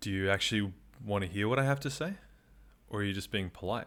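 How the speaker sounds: low, intimate, private tone, not conspiratorial. Retelling what a man asked them, quoting him in a lowered, intimate voice. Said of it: "he lowers his voice, not like to like a conspiratorial level, just to a more intimate level".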